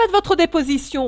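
enraged, loud voice, pitched way up. The king repeats his order to the trembling hatter: angry. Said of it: "répéta le roi en colère".

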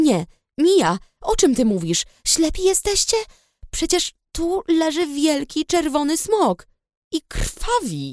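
indignant, outraged disbelief, high and swooping. Anna answers friends who doubt her and threaten to call her mother, indignant. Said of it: "Oburzyłam się".

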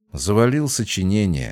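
ordinary delivery

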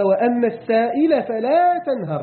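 normal talking voice

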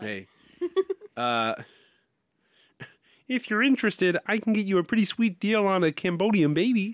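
thin, high, little frog puppet voice. Asked to say something as Kermit the Frog: Kermit the Frog voice. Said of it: "say just this as to".

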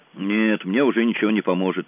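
ordinary delivery

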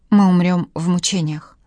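ordinary delivery

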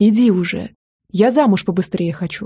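ordinary talk

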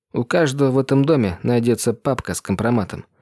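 plain

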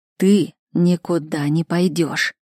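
slow hiss, every word spaced apart, syllable by syllable. Reading a story where a man stops a girl leaving, quiet syllable-by-syllable hiss. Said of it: "Тихо, раздельно, чуть ли не по слогам прошипел Семён".

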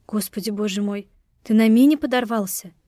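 ordinary delivery, nothing marked

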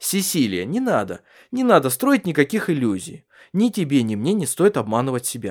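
ordinary talk

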